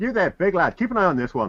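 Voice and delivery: very high-pitched, loud yell. Voicing a character running off who calls back over his shoulder: yelling back. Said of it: "yelling back".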